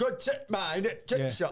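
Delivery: put-on piss-taking Northern accent. Retelling how a friend talks to them: mocking northern accent. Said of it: "a Northern piss-taking accent".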